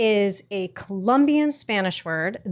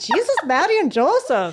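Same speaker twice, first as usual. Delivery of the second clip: bad, put-on Irish accent, pitched up; 8 semitones higher, 4 dB louder than usual. Trying an exclamation after admitting she can't do an Irish accent, bad attempted Irish accent. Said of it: "I can't do an Irish accent. I can I can say kind of like".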